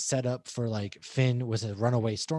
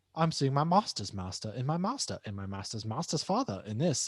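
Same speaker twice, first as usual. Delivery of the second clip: terrible, bad fake British accent, put on. Retelling what Rey says on seeing her masters: terrible British accent as Rey. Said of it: "I did a terrible British accent".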